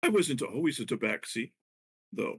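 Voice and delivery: slow, drawn-out stage whisper. Voicing a character who tells Vincha a secret: whispering. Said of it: "but she'll whisper to you".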